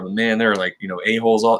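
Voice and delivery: normal talking voice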